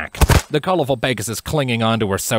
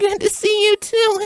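feeble, weak, very high voice. Catching her breath, she smiles sheepishly and answers, weakly. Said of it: "she said weakly".

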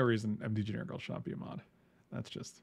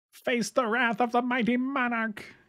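very high, loud, grand royal proclamation voice; 11 semitones higher, 5 dB louder than usual. Speaking to the group during the game, doing a put-on monarch voice. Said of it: "That was my monarch voice".

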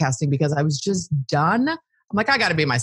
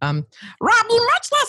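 put-on cartoon voice, much higher pitch. Asked by another speaker to say a sentence in their cartoon voice. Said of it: "but in your cartoon voice".

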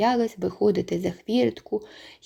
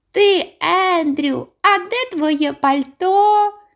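shrill, thin, little squeaky voice, drawn out; 9 semitones higher, 6 dB louder than usual. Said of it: "підробляючи під тонкий паскливий голос мій жайворон".

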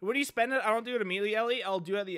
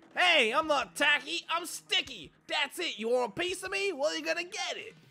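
put-on heavy New York accent with raised pitch; 9 semitones higher than usual. Playing through a game, the speaker voices Tape Capone's lines in a New Yorker accent. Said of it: "How was my New Yorker accent?".

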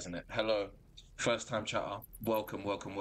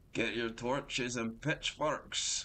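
awful, clumsy Scottish accent; 3 semitones higher than usual. While selling a weapon in the game, the speaker quotes a line in an awful Shrek Scottish accent. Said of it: "That was an awful Scottish accent".

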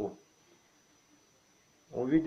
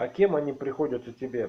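ordinary delivery, nothing marked

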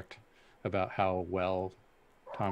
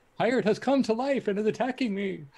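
mock giddy excited voice, higher and louder; 6 dB louder than usual. Acting out giddy american tourists at a pirate attraction: imitating giddy american tourists. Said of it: "the giddy American tourists that are like".

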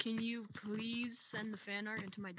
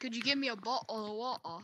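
fake British accent, louder; 4 dB louder than usual. Asked by another player to do the British water bit: put-on British accent. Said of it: "Do your best British water bite thing".

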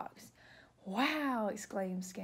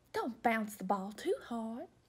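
put-on genteel, drawling southern belle debutante accent. Storyteller reading Lady and the Tramp, Lady calling to her son, Lady in a southern accent. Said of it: "Lady should have like a southern accent".

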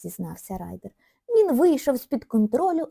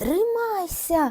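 shrill, yelled shout; 7 semitones higher than usual. During a race, one character calls to another stuck in a log: shouting. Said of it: "крикнув Райдер".

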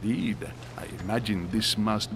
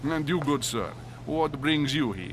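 creature-of-the-night vampire voice; 3 semitones higher than usual. Awaiting the festivities, a guest asks a good sir what brings him here, vampire voice. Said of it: "You sound like a vampire".

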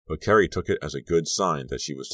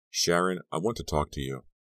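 ordinary delivery, nothing marked

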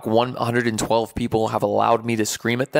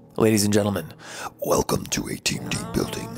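eerie, hushed, creepy, breathy whisper; 3 semitones lower, 4 dB quieter than usual. Speaker welcoming the group to a team-building program, in a creepy voice. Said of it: "That was a creepy voice".

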